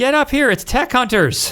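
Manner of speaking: very high, far-carrying yell. Voicing a woman calling everyone up from the valley: yelling down the valley. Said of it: "she just yells out down the valley".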